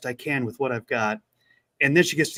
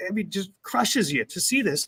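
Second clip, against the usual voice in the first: plain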